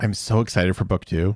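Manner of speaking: not excited, tired, unenthusiastic-sounding. Very tired after a late night, speaker says they're excited for book two, not sounding excited. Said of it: "I know I don't sound it very much".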